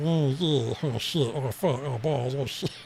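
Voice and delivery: slow, croaky, dopey frog-in-throat cartoon voice. Showing the only impression they can do consistently, frog-in-throat voice. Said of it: "put a frog in my throat".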